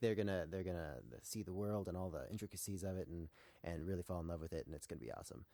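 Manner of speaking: plain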